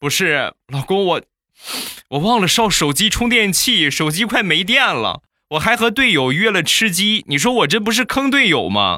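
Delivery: very high-pitched, flustered, anxious pleading. A husband retells what his wife told him, imitating an anxious wife. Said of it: "一脸焦急的就跟我说".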